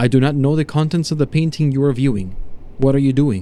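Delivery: ordinary delivery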